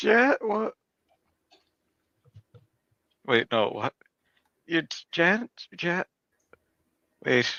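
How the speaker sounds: puzzled, bewildered, confused. A player sees Janice across the hallway in Aurora's clothes, confused. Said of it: "I'm so confused".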